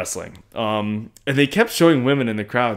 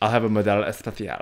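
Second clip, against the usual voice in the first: put-on Barcelona Spanish accent, quieter; 5 dB quieter than usual. Ordering a beer at a Sox game: Barcelona accent. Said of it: "I just like doing the Barcelona accent".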